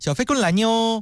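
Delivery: coy, affected, high cutesy voice squeezed from the throat. Explaining the squeezed-throat voice some women put on, the speaker demonstrates: squeezed, cutesy affected voice. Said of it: "是这种腔调".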